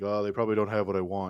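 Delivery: mimicked flat monotone. Retelling a friend's reply at the mall: imitating a monotone voice. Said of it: "He's really monotone".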